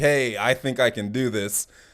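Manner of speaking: normal talking voice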